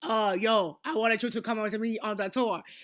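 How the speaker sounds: dubbed-movie voiceover voice. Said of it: "voiceovers for like movies".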